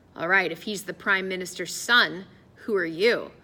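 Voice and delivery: ordinary talk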